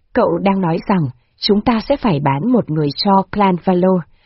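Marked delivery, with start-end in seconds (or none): none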